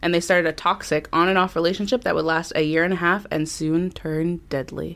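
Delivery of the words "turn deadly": slow, soft, dramatic, ominous foreboding. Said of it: "I threw that dramaticness in there".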